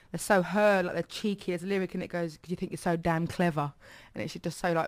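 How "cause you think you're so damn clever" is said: usual speaking voice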